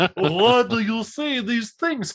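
very high, slow, drawn-out put-on character voice. Retelling a character's line again, in a Count Chocula voice. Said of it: "my version was Count Chocula".

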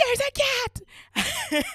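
shrill, very high, loud shriek. Recounting seeing the roommate on the couch, retelling a scream. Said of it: "I just screamed".

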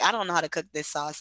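ordinary talk

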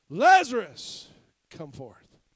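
very loud, booming, swooping cry. Retelling how Jesus calls out to Lazarus: imitating a loud cry. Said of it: "cries out with a loud voice".

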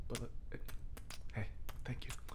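quiet whisper.

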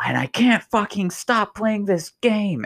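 play-acted very high, shrill, rising screaming tirade. Retelling a video where a streamer screams at viewers: imitating a streamer screaming. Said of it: "he's screaming, right, at his viewers".

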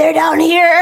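loud, high, strangled croaking voice.

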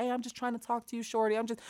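soft, high, insistent guy. Retelling how a man in a club badgers two women: imitating a man badgering women. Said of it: "some guy badgering them".

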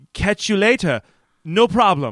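awful, stilted broken English. Retelling a character repeating lines: imitating awful broken English. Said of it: "this awful broken English".

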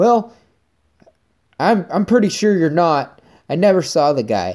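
high, loud, angry voice.

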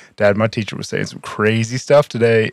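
normal talking voice

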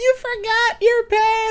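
very high, slow, embarrassing yell. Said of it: "and scream at you".

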